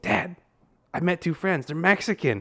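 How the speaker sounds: high, blunt little blurt. Retelling what a young daughter said after sunday school: imitating a loud blunt announcement. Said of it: "She said it so loud".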